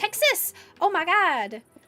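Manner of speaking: very slow, clumsy, drawn-out American accent. Reading out a viewer's location from chat: botched American accent. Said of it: "I didn't just do a botched American accent".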